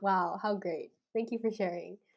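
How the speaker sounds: put-on sarcastic voice. Retelling own usual reply to someone's long answer: awkward sarcastic tone. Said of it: "I sound so awkward and, like, sarcastic".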